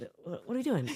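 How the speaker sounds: mock irritated, exasperated, annoyed tone. Mocking the other speaker's habit at a wake: imitating an annoyed question. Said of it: "you'd be like".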